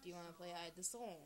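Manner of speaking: plain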